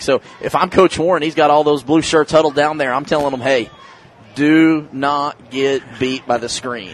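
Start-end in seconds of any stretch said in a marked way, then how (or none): 3.4-6.9 very slow, drawn-out, measured, emphatic instructive tone. Acting as a coach addressing huddled players, line said very slow and deliberate. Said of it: "you say it real slow like that".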